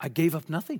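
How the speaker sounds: put-on accent from Wales. Quoting a doctor who left medicine for the ministry, the speaker uses a Welsh accent. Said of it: "in that wonderful Welsh accent".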